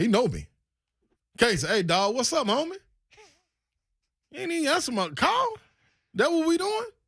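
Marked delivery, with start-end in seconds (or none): 1.7-6.8 high-pitched, mock confrontational tone. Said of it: "And I'ma approach him".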